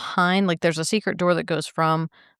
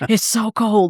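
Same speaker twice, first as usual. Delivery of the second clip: put-on whisper, pitched higher; 4 semitones higher, 4 dB louder than usual. Retelling what May said as the K two meter went off: whispering like May. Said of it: "she's whispering it".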